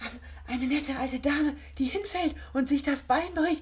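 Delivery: high-pitched, breathless, gasped-out speech. One of a group trying to stop laughing answers the challenge, gasping. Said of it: "keuchte Kovac".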